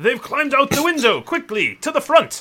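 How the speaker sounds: very high, very loud battle shout. Game master voices the watch commander calling behind him: Ulrich Schutzmann shouting. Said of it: "shouts behind him".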